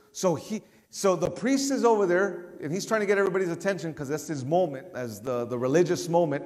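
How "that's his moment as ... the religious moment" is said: normal talking voice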